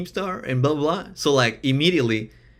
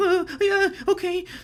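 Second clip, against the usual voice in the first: put-on, very high, dog-like whimper. Imitating how they sounded on the call: imitating own past whimpering. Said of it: "whimpering like".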